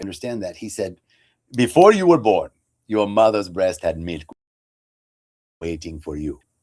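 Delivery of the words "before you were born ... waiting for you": put-on poor Ghanaian accent. Retelling what the Rev told the speaker, in a bad Ghanaian accent. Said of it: "It's my bad Ghanaian accent".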